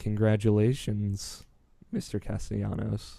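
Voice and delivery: droning, expressionless, weird flat monotone. Describing her congratulating him, the speaker quotes her line: imitating weird monotone voice. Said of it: "She always talks in that weird monotone voice".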